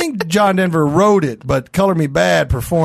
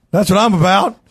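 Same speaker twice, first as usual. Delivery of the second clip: voice cracking and breaking; 3 semitones higher than usual. Insisting on his point to another speaker: voice cracking. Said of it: "your voice cracked".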